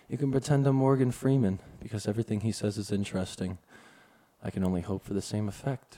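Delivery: soothing voice. Talking to listeners who may not hear during a connection error, soothing voice. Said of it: "speak to you in a soothing voice".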